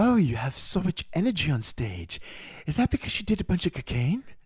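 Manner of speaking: put-on lifted British accent. Quoting Princess Margaret from a memoir: Princess Margaret's British pronunciation. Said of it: "she said it just the way you say cocaine".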